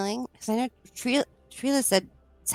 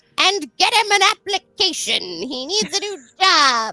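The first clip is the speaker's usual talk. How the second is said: loud, high-pitched shouting; 7 semitones higher, 8 dB louder than usual. A player voices their character Mushnook's demand at the table, Mushnook shouting. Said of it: "she she shouts".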